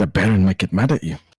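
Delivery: quiet whisper. Leaning in to another character with a warning: whispering. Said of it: "I lean in and whisper".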